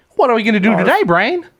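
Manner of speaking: very high, silly, goofy, dopey cartoon mouse voice. Explaining his earlier voice to the others, then performing Pinky voice. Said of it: "That was my Pinky voice".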